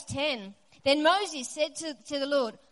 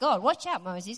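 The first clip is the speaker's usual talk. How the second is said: normal talking voice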